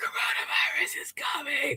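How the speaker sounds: breathy, creepy, scary heavy-breathing whisper. Retelling a prank call, imitating a heavy-breathing prank call. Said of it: "plus heavy breathing plus coronavirus".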